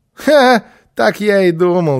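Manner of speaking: loud shout, slow, deliberate and drawn out. Kirre shouts right after Alberg says he cannot bake. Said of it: "закричал Кирре".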